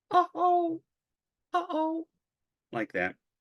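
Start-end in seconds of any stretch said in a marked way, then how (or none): 0.1-2.0 alien voice, way up high, slowly stretched. Retelling a being bumping into the bed during an alien abduction, imitating the alien being. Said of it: "I will do my best impersonation of her".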